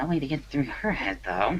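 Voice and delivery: very hushed, quiet mumble, half-swallowed. A character gives up on a conversation, then adds a remark: said quietly. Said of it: "he quietly says".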